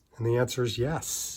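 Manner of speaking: barely audible, very quiet whisper. Speaking at home while talking about buying a luxury watch: whispering. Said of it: "I'm whispering it".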